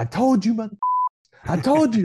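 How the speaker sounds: put-on yelling. Retelling a young teammate rounding third base: imitating someone yelling.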